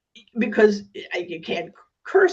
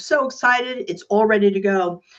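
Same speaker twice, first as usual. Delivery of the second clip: ordinary talk, nothing marked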